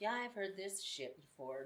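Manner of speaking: mocking, know-it-all, condescending, dismissive tone. Retelling how a supervisor spoke to her, imitating a condescending tone. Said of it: "just had this tone in his voice".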